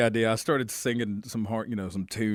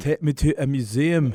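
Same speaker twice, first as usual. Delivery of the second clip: convincing, loud, put-on Scottish accent; 4 semitones higher, 5 dB louder than usual. Imitating a scottish speaker asking the iphone assistant, in a scottish accent. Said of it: "That's a very good Scottish accent".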